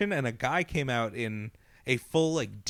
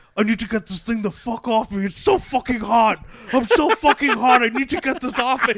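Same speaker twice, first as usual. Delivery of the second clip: put-on, very loud, high, full-panic freakout; 11 semitones higher, 11 dB louder than usual. Retelling what the guy in the demon suit said walking past, imitating panicked freaking out. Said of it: "He's just freaking out and just and just panicking".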